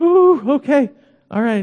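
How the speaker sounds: play-acted, high, fearful, quivering, deferential little voice. Describing talking to a police officer, acting out the reply: mock nervous quivering voice. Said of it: "Got a little quiver in my voice".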